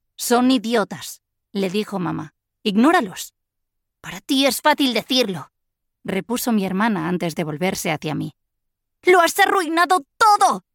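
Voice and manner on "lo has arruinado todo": very high, loud, shrill shrieking voice. After complaining about teasing at school, a sister turns on her sibling: shrieking. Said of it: "Chilló".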